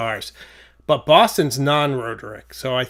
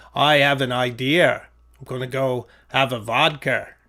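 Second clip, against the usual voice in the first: put-on Boston accent; 2 semitones lower, 4 dB quieter than usual. Speaker quoting a co-speaker's favorite lines back to him, in a Kennedy accent. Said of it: "in the Kennedy accent".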